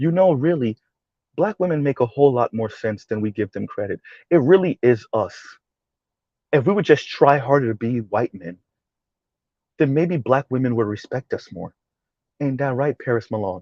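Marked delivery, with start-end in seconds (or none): 0.0-11.7 put-on calm, soft, effete voice, quieter. Mocking what some would like to hear: mock calm, effeminate tone. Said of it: "If I use this tone".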